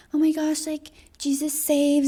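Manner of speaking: mock soft, high-pitched preachy motherly voice. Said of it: "my mom was definitely like that".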